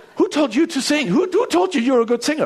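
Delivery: put-on British accent. Retelling a talent show judge's reply, British accent imitating Simon. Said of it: "With a British accent that I can't do".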